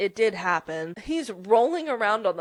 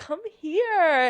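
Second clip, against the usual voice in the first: mock giggly flirty voice, higher pitched; 7 semitones higher than usual. Retelling a scene where a character calls someone over: imitating giggly flirting. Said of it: "all giggly".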